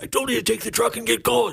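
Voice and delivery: very high, mock furious angry shout. Retelling what his angry dad yelled at them: imitating his dad screaming. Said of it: "yelled at us".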